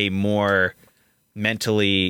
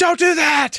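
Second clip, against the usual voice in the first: put-on, abrupt, very high, shrill screaming outburst; 5 dB louder than usual. Describing a character who suddenly goes from quiet to loud, imitating someone screaming. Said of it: "he was just screaming".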